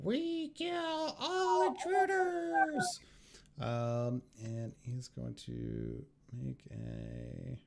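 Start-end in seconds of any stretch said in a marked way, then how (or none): 0.0-3.0 shrill, piercing, very high, loud war cry. Game narrator voices a foe who strides in at the intruders: screaming. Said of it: "and just screams".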